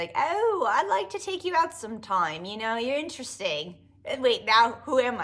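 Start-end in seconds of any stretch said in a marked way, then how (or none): 0.1-3.8 put-on British accent. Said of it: "I'll just give him a British accent".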